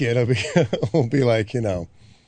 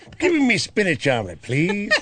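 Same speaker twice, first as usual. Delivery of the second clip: side-of-mouth cartoon voice, much higher; 7 semitones higher than usual. Showing a fallback for people who can't do accents, Popeye voice, side of mouth. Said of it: "just talk out of the side of your mouth".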